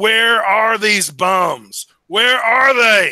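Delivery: high, loud scream, "bums" dragged out. Voicing a big heavy guy banging on the guild hall door: screaming. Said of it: "He's screaming".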